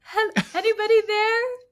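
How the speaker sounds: put-on very high, frightened, panicky calling out. Retelling calling out from inside a closed coffin: imitating own panicked call. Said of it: "when I started panicking".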